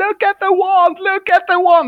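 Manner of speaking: very high, shrill, wild, acted child screaming. Retelling a magic show where a kid screamed: imitating a kid screaming. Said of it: "the kid goes banana screaming".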